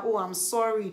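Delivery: plain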